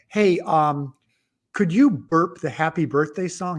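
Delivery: ordinary delivery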